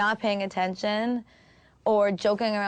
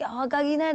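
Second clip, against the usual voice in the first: put-on Swedish-Moroccan accent; 6 semitones higher than usual. Retelling what a co-writer said in the studio, imitating a crazy accent. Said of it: "He's got a crazy accent".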